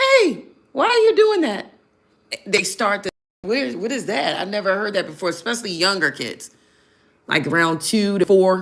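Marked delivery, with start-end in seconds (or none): 0.0-1.7 very high, loud, bouncy, swooping put-on voice. Speaker demonstrates a trick for children who aren't listening: high-pitched voice. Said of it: "like a high pitched voice".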